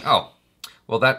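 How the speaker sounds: usual speaking voice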